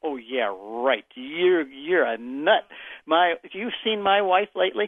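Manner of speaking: mock, very slow, scoffing, sarcastic disbelief. Retelling the tone of his doubting reply: mock-sarcastic disbelief. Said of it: "the tone of his voice was".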